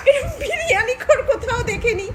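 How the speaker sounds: high-pitched laughing, close to tears.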